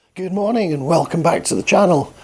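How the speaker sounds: croaky, hoarse, croaking voice. Opening a video to viewers while the voice is still recovering, croaky voice. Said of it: "it still sounds a bit croaky".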